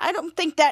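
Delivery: plain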